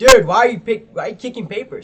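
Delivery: very loud, high-pitched, indignant angry yelling. Recounting a fight over thrown paper, acting out the other person's yell. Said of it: "He starts yelling".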